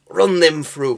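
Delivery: very loud, high, deliberately bad Lancashire accent. Quoting the pikemen's lines from the game Stronghold, in a bad Lancashire Stronghold pikeman accent. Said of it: "a really bad attempt at a Lancashire accent".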